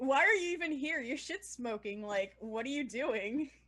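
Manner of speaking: sneering, judgy, scornful tone. Discussing oils with a low smoke point, the speaker trash-talks them, judgy. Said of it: "I'm being particularly judgy of them".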